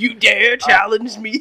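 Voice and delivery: very loud, high screaming. Joking about a casting idea, Eric Andre as the voice of Superman, screaming. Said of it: "He's just screaming the whole time".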